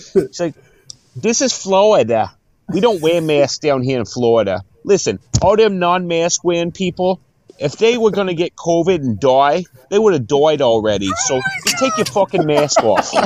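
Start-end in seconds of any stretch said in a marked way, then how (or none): 1.2-13.1 put-on Boston accent, laid on thick, pitched up. Quoting a bartender from Boston in a story, imitating a Boston accent. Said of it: "Do the Boston accent now".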